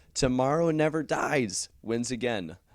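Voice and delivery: cracking voice. Asking viewers to say the round's winning film together, voice cracking. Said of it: "my voice just cracked".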